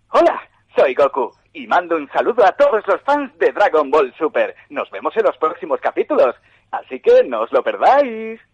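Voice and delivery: very loud, high, heroic anime hero voice. Goku's new voice actor, asked in an interview, greets fans in Goku voice. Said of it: "¿Y con la voz de Goku podrías".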